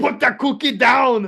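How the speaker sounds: slowly dragged-out words. Asked by the other speaker to say the famous line in an Arnold voice. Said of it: "Say it in your Arnold voice".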